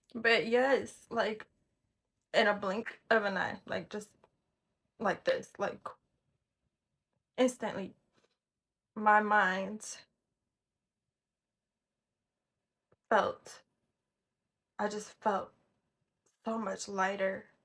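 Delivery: tearful, crying voice while talking. Telling viewers how a prayer quieted their mind: crying while talking. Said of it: "I'm sorry to be on here crying".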